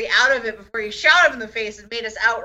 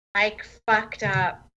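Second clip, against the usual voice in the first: hushed whisper; 5 dB quieter than usual. Voicing Duke, who is still very close to Craig: Duke whispering. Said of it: "that's what Duke is gonna whisper".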